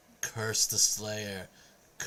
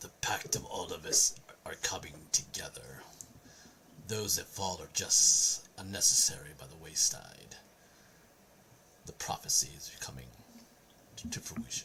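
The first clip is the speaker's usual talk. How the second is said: low, menacing, growling possessed voice; 4 semitones lower than usual. Voicing a character who grips a player and growls: growling possessed voice.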